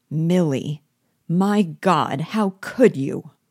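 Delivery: slow, genuinely revolted, repulsed exclamation. In a stage scene, a man speaks to a woman at a table; repulsed. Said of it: "with a note of real repulsion in his voice".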